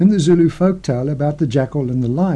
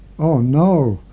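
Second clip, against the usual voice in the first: groaning. Narrator reads Jackal's line as he stops dead in his tracks, moaning. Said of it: "Jackal moaned".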